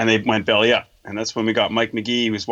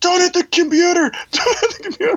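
piercing, very high-pitched, shrill screaming; 4 dB louder than usual. Retelling pulling a man off his partner in a fight: imitating someone screaming.

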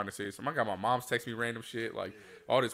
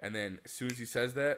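ordinary delivery

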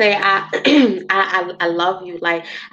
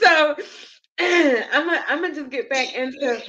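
tearful, high-pitched, slow, talking through tears; 7 semitones higher than usual. The speaker tries to stop crying and get back to the questions, crying while talking. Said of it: "So let me stop crying because I feel that I cry ugly".

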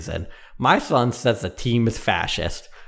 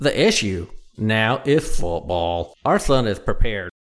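put-on southern American accent. Quoting someone's words, in a southern accent. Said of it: "I'm going to come out of the southern voice".

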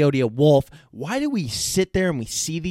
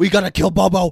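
put-on frantic cartoon scientist voice, higher and louder; 3 semitones higher, 6 dB louder than usual. Retelling a Rick and Morty scene, imitating Rick. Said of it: "Rick's all like".

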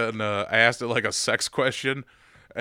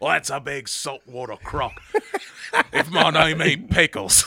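higher-pitched Australian wildlife host voice; 4 semitones higher than usual. Voicing a character named Pickles, Steve Irwin voice. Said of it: "I'd make him Steve Irwin's voice".

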